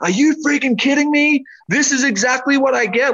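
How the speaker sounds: mock raging, high, furious, top-of-the-lungs screaming. Retelling arguing with god while driving, imitating own furious screaming. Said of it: "screaming at the top of my lungs, so angry at God".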